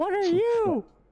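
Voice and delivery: very high, loud, startled cry. A player's character meets its doppelganger, fairly loud and startled. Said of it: "in a fairly loud voice".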